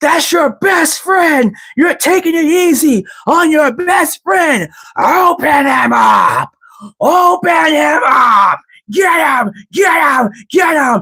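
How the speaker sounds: very high pushy urging voice. Vince McMahon comes out after Austin goes off on Jim, in a Vince McMahon voice. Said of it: "in his Vince McMahon voice".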